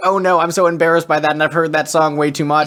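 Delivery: plain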